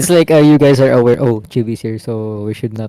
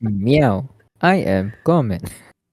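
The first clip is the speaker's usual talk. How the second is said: put-on robotic computer voice, quieter; 5 dB quieter than usual. Voicing the cat as a computer translator: imitating text-to-speech voice. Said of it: "Text to speech".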